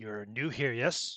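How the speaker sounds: put-on heavy, thick, laid-on German accent. Voicing a stranger at a tavern table: thick German accent. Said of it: "He speaks with a thickly, uh, accented English. His accent is German".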